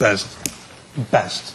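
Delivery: stress on the word "best". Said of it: "I emphasize the word best".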